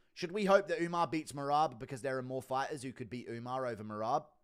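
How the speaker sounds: usual speaking voice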